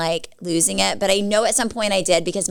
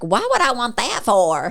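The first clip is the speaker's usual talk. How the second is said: spoiled, bratty, swooping whine; 3 semitones higher than usual. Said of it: "And I was like".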